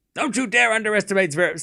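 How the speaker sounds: put-on very high full-on yelling. Speaker defending Zverev while another person tells him to stop, yelling. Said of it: "Stop yelling".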